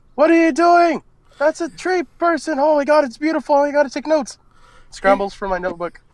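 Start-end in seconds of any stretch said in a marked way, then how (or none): 0.2-4.4 shouting out, higher. Voicing a character who sees a companion climbing a tree creature: yelling out. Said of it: "I yell out".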